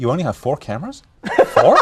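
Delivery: put-on, swooping American accent. Retelling what was heard in the earpieces: imitating Mickey's American voice. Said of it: "this American's voice saying".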